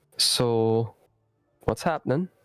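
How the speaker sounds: quiet, soft delivery. Game master voicing Ivy, asking players who are playing cards, speaking quietly. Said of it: "Ivy will quietly say".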